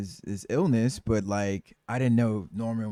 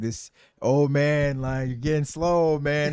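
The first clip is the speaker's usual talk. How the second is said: high, cocky, swaggering, mocking delivery; 5 semitones higher, 4 dB louder than usual. Retelling a game scene where a hunter mocks an old man: imitating Hunter's cocky taunt. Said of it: "Hunter was so cocky".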